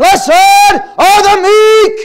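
very loud, very high, lifted-up preaching shout. Acting out addressing thousands with no pa system, in an acted raised preaching voice. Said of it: "Does that sound very meek?".

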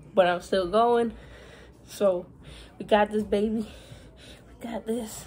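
panting, winded and short of breath. Still riding the bike while talking, out of breath. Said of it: "I'm already out of breath".

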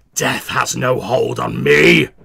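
hissed out very loud and rasping. Speaking as a character during a tabletop game, hissing. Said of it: "hisses out".

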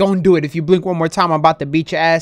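ordinary delivery

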